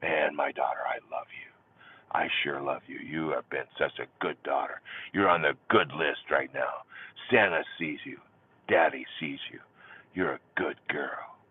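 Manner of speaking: whispering. Father hugging his daughter, speaking into her ear, whispering. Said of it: "I'm going to whisper in her ear".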